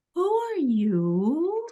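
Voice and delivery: sugary-sweet, high voice with "you" drawn out. Recalling hearing a voice ask a question, imitating a very sweet voice. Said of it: "very sweet voice go".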